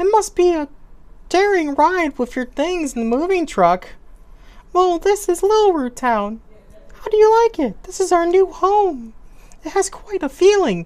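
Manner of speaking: very high feminine put-on woman voice. Voicing the mom's lines as she welcomes Jimmy, in a put-on woman voice. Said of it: "This is kind of my woman voice".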